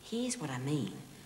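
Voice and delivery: low, hushed half-whisper, close in. Showing another character what you mean, half-whisper in his ear. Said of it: "why are you whispering in my ear".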